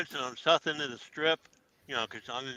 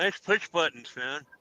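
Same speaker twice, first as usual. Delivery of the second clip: ordinary talk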